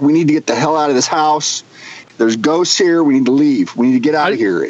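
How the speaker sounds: ordinary delivery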